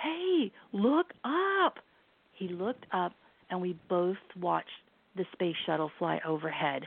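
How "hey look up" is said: high-pitched scream, yelled. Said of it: "I screamed at him".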